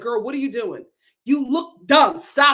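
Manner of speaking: put-on screaming. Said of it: "I'm screaming at myself, like".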